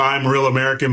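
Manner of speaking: usual speaking voice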